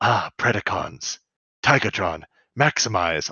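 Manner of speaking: hushed half-whisper, under the breath. Retelling a scene where a character suddenly stops, half-whispering to himself. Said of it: "he whispers to himself".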